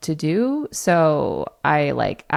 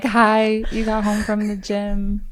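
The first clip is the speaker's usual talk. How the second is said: fake flirty tone, pitched higher; 5 semitones higher than usual. Repeating the message just recorded: imitating own put-on flirty voice. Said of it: "I tried to make it sound flirty".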